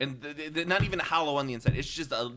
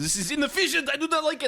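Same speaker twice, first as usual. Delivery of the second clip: high, loud, barked put-on German accent; 13 semitones higher, 5 dB louder than usual. Imitating Tesla blasting steam users: Tesla impression with German accent. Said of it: "Why do you sound German?".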